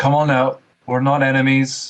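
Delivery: acted yelling. Calling out to a hidden figure in the game: yelling in character. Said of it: "I'll just yell".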